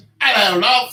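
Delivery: put-on fake British accent. Joking about how someone's mom might greet them: put-on British accent. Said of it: "She probably speaks with a British accent".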